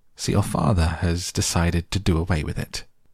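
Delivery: ordinary delivery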